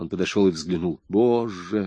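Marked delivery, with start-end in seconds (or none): 1.1-1.9 muttered through teeth, lower and quieter. Narrating Rack's reaction on seeing who lies in the coffin, muttered through teeth. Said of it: "пробормотал он сквозь зубы".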